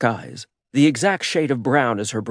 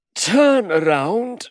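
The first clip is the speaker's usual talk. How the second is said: yawning, pitched-up voice; 7 semitones higher than usual. Narrator reading a man's line as he stretches his aching muscles: said through a yawn. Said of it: "he said through a yawn".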